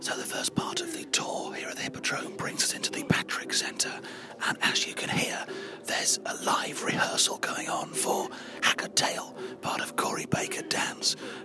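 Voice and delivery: soft, hushed whisper. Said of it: "the reason I'm whispering".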